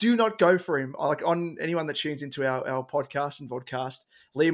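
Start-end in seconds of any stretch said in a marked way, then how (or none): 0.0-0.9 mock desperate, urgent screamed yell. Retelling warning podcast listeners against picking a player: imitating own screaming. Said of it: "and I was screaming".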